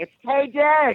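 very high, loud shriek, shouted out. Retelling answering a question heard on the show: imitating own screaming. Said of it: "I was screaming".

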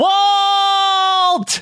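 very high yell with the word stretched long. Turning toward the van while grabbing the paper; yell. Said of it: "I'm going to yell".

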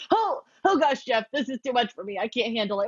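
tearful, choked-up, overwhelmed gush. Retelling own reaction to watching a loved ones visit: retelling being choked up. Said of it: "I did get choked up during the loved ones".

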